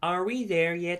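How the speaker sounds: put-on young girl's voice. Voicing a scene with a partner, the speaker plays the granddaughter: [name]'s young girl voice. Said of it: "Do you want to voice the girl".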